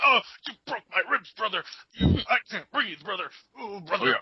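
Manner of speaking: high-pitched pained screaming. Retelling a wrestling match moment: imitating Hulk Hogan screaming. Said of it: "Hogan starts screaming".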